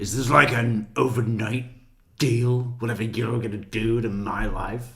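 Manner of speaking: haughty, put-upon, disdainful and scornful tone. Imitating her question to the police about an overnight deal: imitating a disdainful tone. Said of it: "the disdain".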